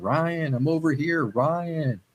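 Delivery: very slow, drawn-out, high calling voice. Speaker recounts hearing an unseen voice call his name, imitating a voice calling out. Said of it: "I'm still hearing that voice going".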